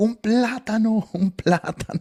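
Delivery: acted-out, high, shouting preacher voice. Telling of a preacher gripping the pulpit, retelling a preacher's shouting. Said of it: "empezó a gritar".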